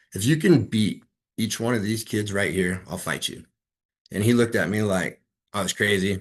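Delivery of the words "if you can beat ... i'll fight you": mock stern, dead-serious, grave, no-joke delivery. Retelling a challenge to a man who interrupted class: retelling a very serious warning. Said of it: "I looked at him very serious".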